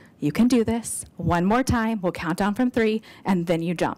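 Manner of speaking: put-on whisper. Retelling a helper's encouragement on a bungee ledge: imitating a whisper. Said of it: "steps up and whispers in my ear".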